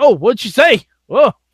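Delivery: high-pitched, commentator-style on-air announcer voice. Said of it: "the announcer's like".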